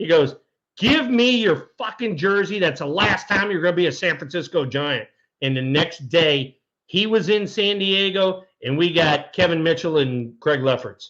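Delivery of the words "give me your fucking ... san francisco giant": contained, furious angry outburst. Retelling a general manager firing a player: imitating a manager screaming. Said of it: "he's screaming at the top of his lungs".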